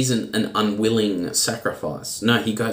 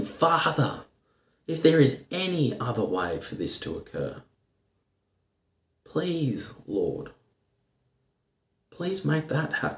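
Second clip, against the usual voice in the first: hushed, anguished, desperate tone; 4 semitones higher, 5 dB quieter than usual. A speaker quotes Jesus praying to his Father, acting out an anguished plea. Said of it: "You can hear the anguish in his voice as he pleads".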